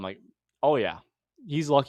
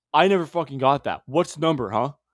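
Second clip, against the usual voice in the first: acted-out mock-angry man's voice; 2 semitones higher, 5 dB louder than usual. Retelling a man disputing a call about his phone number, imitating a pissed-off man. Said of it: "he's all pissed off".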